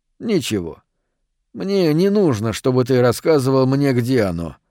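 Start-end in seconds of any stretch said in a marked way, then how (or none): none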